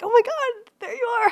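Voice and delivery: put-on excited laughing. Imitating dad seeing the podcast icon in his app: imitating dad's excited laughing. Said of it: "he was like".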